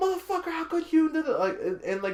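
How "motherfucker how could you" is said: very high, panicked freak-out screaming. Retelling a movie scene where she finds out he's cheating: imitating someone screaming. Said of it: "she's screaming, like".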